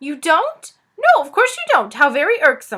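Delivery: loud, squeaky voice swooping up and down in pitch. Narrator reads the lizard speaking up from the ground, in a squeaky Suz voice. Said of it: "said a squeaky voice".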